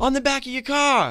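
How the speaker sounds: shrill, full-volume yell. Retelling what a driver in traffic yelled through the window: imitating someone yelling. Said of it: "yelling at me to roll down my window".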